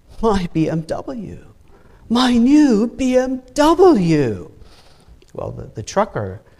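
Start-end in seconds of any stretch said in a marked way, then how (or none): 0.2-4.5 put-on moan, much higher pitch. Telling a joke and voicing the banker's reaction over his BMW: mock moaning.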